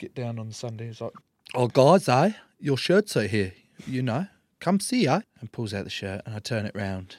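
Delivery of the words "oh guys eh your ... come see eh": put-on loud South African accent. Imitating a South African rugby coach's greeting: imitating Will Stadler's South African accent. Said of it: "a South African rugby coach there called Will Stadler".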